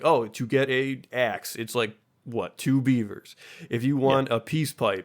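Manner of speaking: plain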